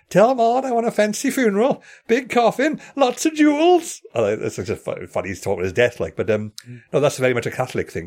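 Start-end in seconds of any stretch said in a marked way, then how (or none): 0.1-4.0 acted, very high, slow, drawn-out screaming wail. Recapping the scene where Ned is attacked by baboons, retelling Ned's scream. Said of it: "he's just screaming".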